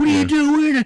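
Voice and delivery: very high-pitched, shrill, loud freaking out. Retelling a scene where he turns on her mid-battle, imitating someone freaking out. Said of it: "He's like freaking out on her".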